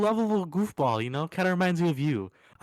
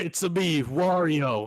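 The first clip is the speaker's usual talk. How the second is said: very slow, drawn-out Italian accent. Answering a request to hear a Wario impression: Wario impression. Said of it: "let's hear your Wario impression".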